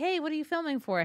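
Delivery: curious, sweet voice. Retelling how a store worker kindly asks about filming: imitating a curious, sweet question. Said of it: "curious and sweet with, like, no attitude".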